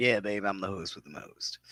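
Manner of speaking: very deep, dropped, cartoonish put-on character voice. Greeting the audience as co-host after being asked to say hello: Beetlejuice imitation. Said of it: "Do my Beetlejuice imitation".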